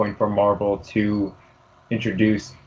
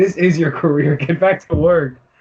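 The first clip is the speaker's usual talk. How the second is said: put-on loud, high-pitched yelling; 8 semitones higher, 5 dB louder than usual. Retelling a run-in at work, the speaker imitates the boss yelling. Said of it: "he's always yelling at me".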